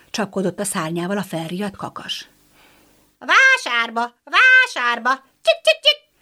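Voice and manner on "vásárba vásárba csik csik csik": very high, swooping, scolding, hen-like clucking cackle. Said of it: "Kotkodácsolta rosszallóan".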